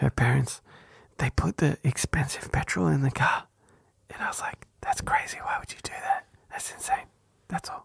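hushed, breathy whisper close to the mic. Telling a story into a boosted mic, whispering. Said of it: "I'm going to whisper".

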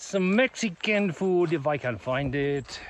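terrible, bad put-on Mexican accent. Planning a stop in Silver City, the speaker talks in a terrible Mexican accent. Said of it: "That was a terrible Mexican accent".

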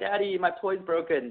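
put-on high, drawn-out, tearful, sobbing child voice. Retelling an ad where the little duck cries to its dad: acting out a crying child.

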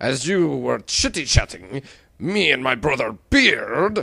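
put-on accent that sounds Russian. A rival announces seizing a sunken ship, Russian-sounding accent. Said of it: "The Russians beat us to it!".

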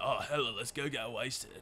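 put-on bro voice. Voicing what a bro's shadow would say, bro voice. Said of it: "That's my bro voice".

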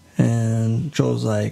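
ordinary delivery

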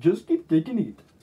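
put-on Indian accent, cartoonish doctor voice. Friends quote a cartoon doctor, in an Indian-accented cartoon doctor impression. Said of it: "he sounds Indian".

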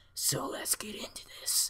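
whispered, sinister, creepy put-on voice. Starting a scary story for the listeners, in a creepy voice. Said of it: "That was a pretty pedophile voice".

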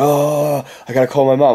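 acted freaked-out, panicky, bugging-out voice. Retelling what she said at three in the morning, imitating someone bugging out. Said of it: "she starts bugging out".

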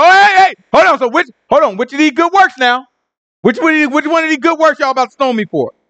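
put-on rushed speech. Acting out Yahushua as people pick up stones to throw, retelling fast talking. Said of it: "Yahushua started talking real fast".

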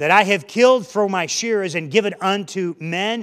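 plain reading voice

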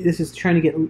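ordinary delivery, nothing marked

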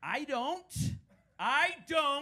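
very high, shrill, loud, stretched-out scream. Retelling the father's reply on the phone: imitating father screaming. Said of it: "he screamed it at me on the phone".

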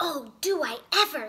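loud, drawn-out, jumping-for-joy joyful shout. Antonio answers the wolf's offer of treats; joyful shout. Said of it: "shouted Antonio as he jumped for joy".

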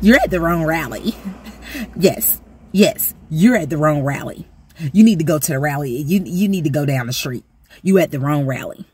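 put-on arrogant, prideful laughing retort. Retelling a candidate's reply to a heckler, imitating an arrogant laughing retort. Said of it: "arrogant, prideful attitude with that little laugh".

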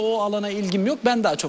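ordinary delivery

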